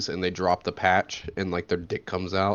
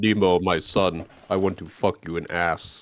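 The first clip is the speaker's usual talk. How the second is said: put-on Russian accent, very slow, every word drawn out; 3 dB louder than usual. Joking about a Nemo remake in costumes, Russian accent. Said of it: "had Russian accents".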